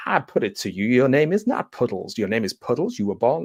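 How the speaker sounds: put-on Southern-accented lawyer voice. Describing a scene, speaker quotes the Joker in Joker's Southern lawyer impression. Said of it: "doing an impression of a Southern fried lawyer".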